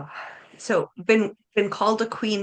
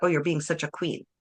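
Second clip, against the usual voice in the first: mock condescending, insulting delivery; 2 semitones lower than usual. Showing how the same word can be said as an insult, mimicking a condescending tone. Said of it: "the tone of the person makes it sound like an insult".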